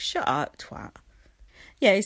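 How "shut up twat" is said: mock words pushed through a laugh, low. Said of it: "he was like sitting like laughing going".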